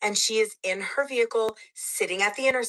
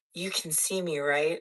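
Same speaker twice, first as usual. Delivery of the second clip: low, flat, expressionless put-on deadpan; 4 semitones lower, 4 dB quieter than usual. Retelling her question to the worker in the store: imitating a deadpan question. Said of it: "She just deadpan stares at him and asks".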